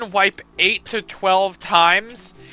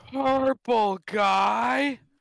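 soft zombie drawl with "guy" long and stretched out; 4 semitones higher, 9 dB quieter than usual. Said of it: "You sounded like the fucking bungee zombie".

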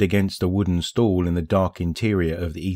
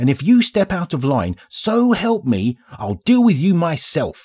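tense, very high, shaking, quivering snarl; 10 semitones higher, 3 dB louder than usual. Reading a story, the little ghost speaks to Spider, snarling, voice quivering with tension. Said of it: "Glint snarled, his voice quivering with tension".

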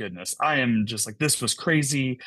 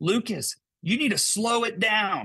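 put-on yelling, high-pitched and carrying; 9 semitones higher than usual. Retelling how the contractor called across the backyard: imitating the contractor yelling. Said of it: "And he yells".

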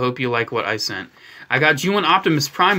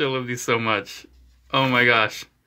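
ordinary talk

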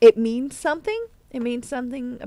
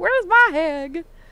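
country accent, pitched up; 7 semitones higher, 4 dB louder than usual. Talking to viewers on the channel, the speaker complains in a country accent. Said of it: "I sounded so country when I said that".

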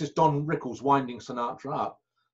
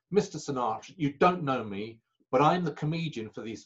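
normal talking voice

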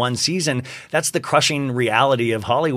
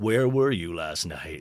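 hushed, murmuring true-crime show host voice; 7 semitones lower, 7 dB quieter than usual. Imagining him questioning Matthew Perry, in a Keith Morrison voice. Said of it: "like in that Keith Morrison voice of like".

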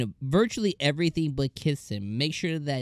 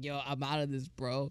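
much quieter, mock-scoffing, dismissive; 10 dB quieter than usual. Recapping a scene where Cain looks to his dad, acting out the dad's mock scoff. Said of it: "he scoffs him up".

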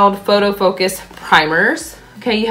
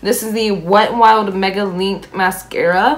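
voice breaking partway through the line. Presenting a mascara in a makeup video, voice cracking. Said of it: "my voice just cracked".

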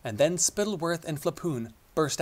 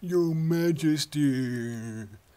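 soft, mocking, put-on sheep-like bleating voice. A man mocks a kneeling old shepherd's wheezed greeting, softly making it sound like a sheep. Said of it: "Spittleworth imitated him softly, making the old shepherd sound like a sheep".

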